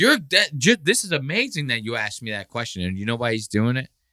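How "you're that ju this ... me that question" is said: condescending, patronizing, pitched-up, buttering-up tone. Imitating someone flattering the questioner: imitating a patronizing tone. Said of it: "he's patronizing Bert right now by going like".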